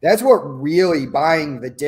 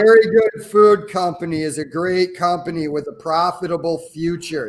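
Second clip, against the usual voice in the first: ordinary talk, nothing marked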